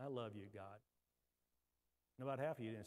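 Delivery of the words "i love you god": soft, quiet, low-pitched words. Leading a group in saying the words, the speaker models saying them quietly. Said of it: "just say that quietly".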